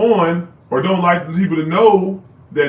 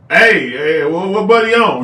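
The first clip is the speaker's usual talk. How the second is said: macho, manly, squaring-up confrontational delivery. Retelling how a brother-in-law confronted a guy: imitating a manly challenge. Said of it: "with a, a, a manly thing".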